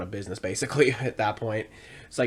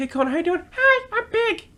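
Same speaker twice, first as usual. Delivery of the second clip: very high, cute creature voice pitched way up; 7 dB louder than usual. Speaker voices him waddling over to greet Kona, in a cute Elmo voice. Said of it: "So the voice that I give him is kind of cute".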